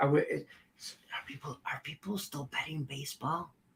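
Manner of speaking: dropping to a whisper.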